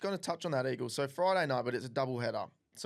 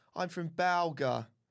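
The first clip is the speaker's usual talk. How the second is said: really posh accent, overdone; 4 semitones higher than usual. Showing how to make the place name balga sound really posh. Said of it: "say Balga and make it sound really posh".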